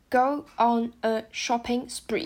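very slow, careful, deliberate phrasing.

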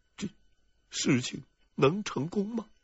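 meek, timid, very quiet, small, hushed voice. Narrator reads a flustered character answering a cold demand, timid small voice. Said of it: "怯生生的小声说道".

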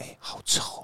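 breathy whisper. Describing what they would say to a companion beside them, whispering softly. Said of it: "我会小小声说".

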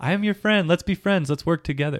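high, sugary, mock friendly tone. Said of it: "You say".

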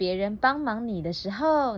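plain reading voice

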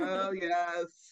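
heavy, loud, all-out sarcasm with "yes" drawn out. Talking about a court rule she must work under, with all the sarcasm in the world. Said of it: "I say that with all the sarcasm in the world".

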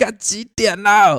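play-acted, very high, furious bellow, dragged out. Recalling a late-night chat at the campsite, the speaker imitates someone above: retelling an angry roar. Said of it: "突然发现上面有人怒吼说".

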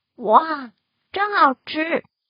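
admiring, high-pitched, loud, praising exclamation. Reading a story, a character tastes a biscuit he was given, praising. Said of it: "阿飞夸赞的说".

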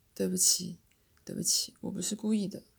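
usual speaking voice

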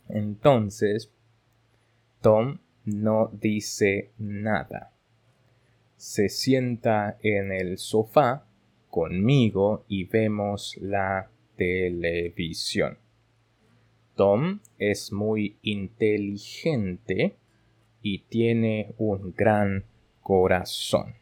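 very slow, careful Spanish reading, every word. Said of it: "我就会用正常速度".

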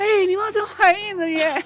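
mock shout. Retelling the doctor holding the phone aside and shouting, retelling a shout. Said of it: "他是拿到旁边就大喊说".

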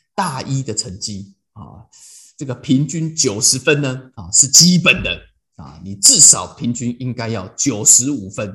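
mock icy, unmoved, cold, low, slow delivery. Retelling how their father answered their school grades; imitating dad's cold reply. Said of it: "我爸就冷冷回了我一句".

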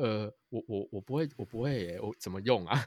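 meek, very timid, low, soft little voice. Retelling being asked to help chop vegetables, the speaker acts out their reply: imitating a timid voice. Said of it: "很怯懦的声音跟他说".

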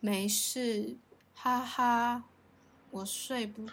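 listless, weak, soft, very slow drawn-out voice. Retelling a roommate's late-night reply: imitating a weak, listless voice. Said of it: "他那个时候讲话就是有气无力".

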